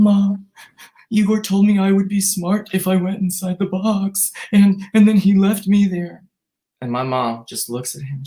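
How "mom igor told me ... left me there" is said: upset, tearful, pitched-up crying voice. Retelling how he complained to the speaker's mom, imitating someone crying. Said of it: "he's crying, he's sweating".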